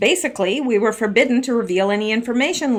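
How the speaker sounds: ordinary delivery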